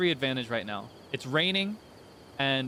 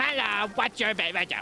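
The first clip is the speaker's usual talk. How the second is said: high, pitched-up, nosy gremlin voice; 5 semitones higher than usual. Describing a game's version of a hero, the speaker voices him: Link as nosy gremlin voice. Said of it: "He's just a gremlin. He's a creature".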